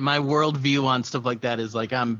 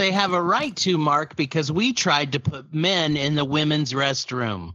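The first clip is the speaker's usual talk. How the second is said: usual speaking voice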